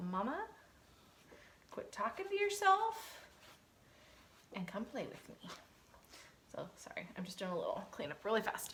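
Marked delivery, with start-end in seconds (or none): 0.1-5.5 pitched way up, very high puppy voice. Retelling what the bored puppy wants: voicing a puppy. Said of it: "she's like".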